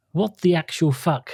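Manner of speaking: usual speaking voice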